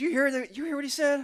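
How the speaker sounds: terrible put-on Southern accent, very high and loud. Retelling what a friend said in a bar: bad imitation of Whitley's Southern accent. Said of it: "I'm getting his accent terrible".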